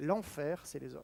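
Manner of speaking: very soft, hushed, almost under the breath.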